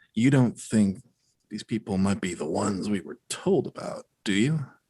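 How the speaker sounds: slow, hushed half-whisper. Playing a character who leans over and half-whispers a question to Braggy: half-whispering in character. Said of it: "I whispered to Braggy".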